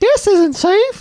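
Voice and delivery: put-on very high, loud little child voice. Trying out voices, now doing a ten-year-old kid voice. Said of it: "That's probably even closer to accurate".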